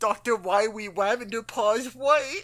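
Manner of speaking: cartoon-style speech, r's and l's said as w's. Joking with others about cartoon voices, speaking in an Elmer Fudd voice. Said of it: "enunciates all his R's and L's as W's".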